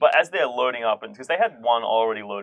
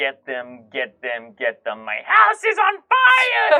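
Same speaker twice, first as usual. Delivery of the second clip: banshee-like screaming, louder; 3 semitones higher, 5 dB louder than usual. Voicing Madame Thornholt as her house burns: yelling like a banshee. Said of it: "Madame Thornholt is yelling like a banshee, screaming".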